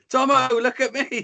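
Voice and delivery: put-on very high small child voice. Retelling a kid on a scooter calling out: imitating a little kid's voice. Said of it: "This little kid's voice".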